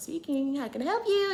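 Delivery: put-on courteous phone manner. Speaker retells answering a young lady's phone call, in her professional phone voice. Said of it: "put my professional voice on".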